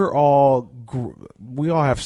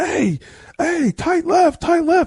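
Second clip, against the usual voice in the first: put-on, very high screaming. Retelling calling to the person next to you in a loud stadium: imitating screaming. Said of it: "you're screaming like".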